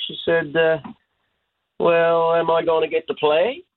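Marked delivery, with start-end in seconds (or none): 1.8-3.6 high, put-on Southern Shore twang. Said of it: "in her Southern Shore twang".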